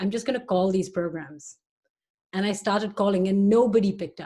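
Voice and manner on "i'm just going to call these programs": usual speaking voice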